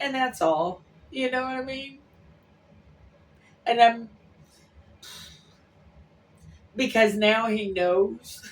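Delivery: tearful, crying while talking. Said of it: "I'm crying 'cause I miss him".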